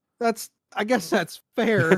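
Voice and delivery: heartbroken, broken, reluctant giving-in tone. Conceding a point in a conversation, broken-voiced. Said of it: "the brokenness in your voice there".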